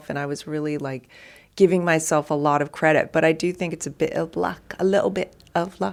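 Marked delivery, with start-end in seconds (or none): 4.8-5.9 put-on Cockney accent, badly done. Chatting with another person, quoting a phrase in a bad Cockney accent. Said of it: "That was my bad Cockney accent".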